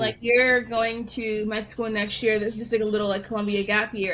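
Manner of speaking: ordinary talk, nothing marked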